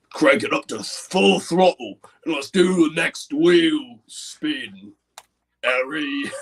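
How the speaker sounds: slow Cockney accent, T's swallowed into glottal stops. After explaining how Cockney drops T's, the speaker addresses Harry: Cockney accent, glottal T's. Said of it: "the Cockney thing is to, to get rid of the T's and do glottal".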